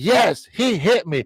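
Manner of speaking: play-acted blaming tone. Retelling the kid answering whether he was hit, imitating an accusing tone. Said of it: "he said it in a way of accusing me".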